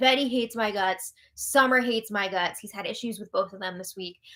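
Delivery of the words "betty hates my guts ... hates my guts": ordinary delivery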